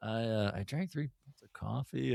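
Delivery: soft, shy, sheepish, embarrassed voice. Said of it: "like, shy about it".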